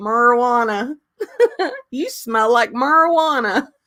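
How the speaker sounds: put-on strong, thick, high-pitched Southern accent, elderly woman's voice. Retelling how a grandmother said a word: imitating Myrtle's Southern accent. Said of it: "she was so Southern, that's how she would say it".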